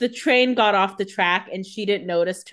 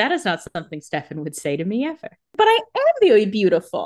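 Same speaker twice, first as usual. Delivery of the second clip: ordinary talk, nothing marked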